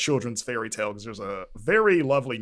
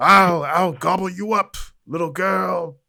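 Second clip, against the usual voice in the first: loud, gruff, rough raised voice; 6 semitones higher, 7 dB louder than usual. Describing a voice actress's role, the speaker imitates her performance: gruff Cheshire voice. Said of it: "just a gruffer version of her voice".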